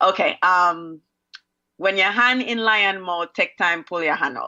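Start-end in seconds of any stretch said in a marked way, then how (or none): 1.8-4.5 Jamaican accent with a rhythmic cadence. Saying a popular saying after being asked: Jamaican way of saying it. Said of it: "say it Jamaican way".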